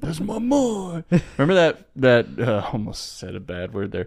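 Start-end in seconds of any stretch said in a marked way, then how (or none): 0.0-1.0 very high, overdone, exaggerated Italian accent. Imitating the father's reaction to hearing this recording: italian accent. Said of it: "You just made him more Italian".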